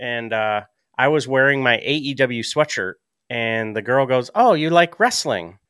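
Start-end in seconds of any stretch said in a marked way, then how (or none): 4.3-5.4 put-on European accent, pitched up. Retelling what a girl in the store asked him, imitating a European accent. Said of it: "she had this like European accent".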